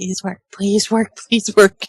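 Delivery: muttered quietly under the breath. Holding someone down in the scene, praying under breath. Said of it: "sitting there praying under my breath".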